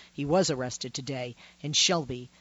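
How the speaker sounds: ordinary delivery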